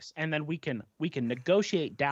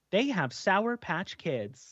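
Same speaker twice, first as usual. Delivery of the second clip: put-on robot voice, higher; 4 semitones higher than usual. Joking about telepathy spoken aloud in a store: TikTok robot voice. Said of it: "that TikTok robot voice".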